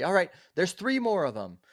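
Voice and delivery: very high, loud, swooping shout. Voicing a character who calls out to everybody: NPC yelling to everyone. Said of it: "he just yells to everybody".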